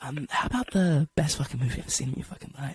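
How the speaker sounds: hushed stage whisper, close to the ear. Acting out a studio whispering an offer into your ear: imitating a whisper. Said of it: "they whisper it in your ear".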